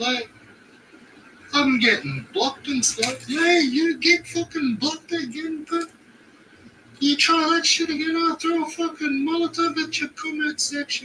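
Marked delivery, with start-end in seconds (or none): 3.3-11.1 put-on Irish-accented voice. In a skit, one character threatens another who makes YouTube videos: Irish accent. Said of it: "fucking Irish".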